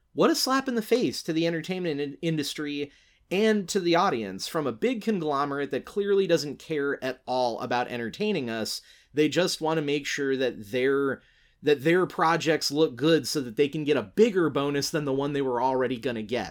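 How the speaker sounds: ordinary talk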